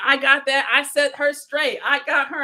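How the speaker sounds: ordinary delivery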